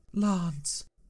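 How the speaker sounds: high, gasped out on a breath. A weak woman brought in from the mud calls to her rescuer, gasping. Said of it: "she gasped".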